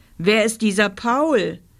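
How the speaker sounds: usual speaking voice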